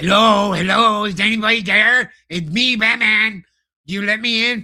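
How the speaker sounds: mocking, high-pitched, loud and slow calling out. Mocking a film scene where Batman knocks: imitating Batman knocking. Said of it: "Batman doesn't knock".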